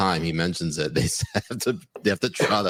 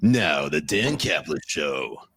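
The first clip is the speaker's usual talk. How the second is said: very slow, drawn-out sports radio announcer voice; 3 semitones lower than usual. Showing how a radio bumper sounds: radio bumper announcer voice. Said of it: "the radio bumpers, like".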